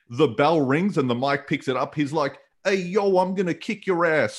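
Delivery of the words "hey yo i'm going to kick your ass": put-on taunting New Jersey accent. Acting out Mortis being picked up by the mic after the bell, in Chris Kanyon's New Jersey accent. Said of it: "with his New Jersey accent".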